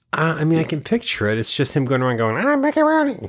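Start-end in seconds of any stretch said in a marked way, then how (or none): 2.4-3.3 put-on very high child-star voice. Picturing the child star's old movies, imitating his higher Mickey Rooney voice. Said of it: "His voice is a little higher".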